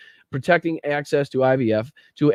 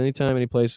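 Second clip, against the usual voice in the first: normal talking voice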